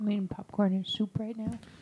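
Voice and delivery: very soft-spoken. Historian asked if they have anything to say, answering really quiet. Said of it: "That's really quiet".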